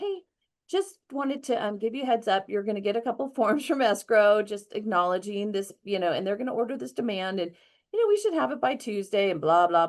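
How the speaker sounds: relaxed, casual, calm, easygoing. Retelling how they phoned the buyer about escrow, retelling own calm phone call. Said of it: "I was so calm when I called the buyer".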